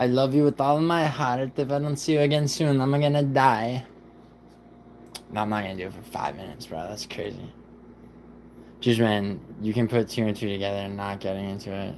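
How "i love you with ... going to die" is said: high, put-on Italian accent, played in character. Speaker announces the accent, then plays a character in an Italian accent. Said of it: "Take an Italian accent".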